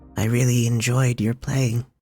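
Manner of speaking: tiny little voice. Narrating to the players, voicing an unseen speaker in a small voice. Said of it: "you all will hear a small voice".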